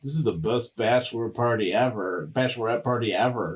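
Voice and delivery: play-acted snide, ironic, over-sold sarcastic delivery. Recounting an episode set at a bar, quote a guy's remark about the party, imitating someone's sarcasm. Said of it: "like sarcastically goes like".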